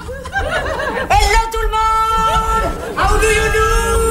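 put-on American voice, high, slow.

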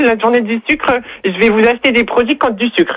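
high, fake, dumb, clueless-sounding voice.

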